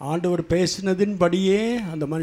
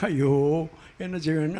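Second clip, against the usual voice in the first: plain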